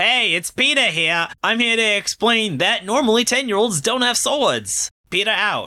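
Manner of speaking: very high-pitched voice, done badly on purpose. Describing a straight-man anime character, doing a really bad Peter Griffin impression. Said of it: "my really bad Peter Griffin impression".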